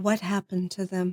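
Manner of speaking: whispered voice. Called on for her whispered question, [name] asks it, whispering. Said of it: "What's your whispered question".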